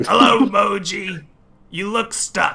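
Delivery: tiny little creature voice, drawn out. From the other side of a small hole, someone speaks to a stuck character; small voice. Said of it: "you hear a small voice".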